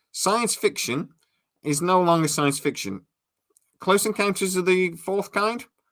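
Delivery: slightly sarcastic tone. Commenting on a hearing about extraterrestrial visits: a little sarcastic. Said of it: "I'm sounding a little sarcastic here".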